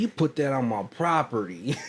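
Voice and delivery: put-on Louisiana twang. Retelling the man's complaint about his property: imitating a twangy accent. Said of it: "You got that twang".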